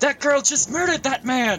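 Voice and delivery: very high, shrill, shouted outcry. Narrating a scene, voicing a man at the alley's edge, shouting. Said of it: "and the man shouts".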